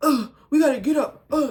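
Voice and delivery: put-on high, loud, grunting hype-man voice.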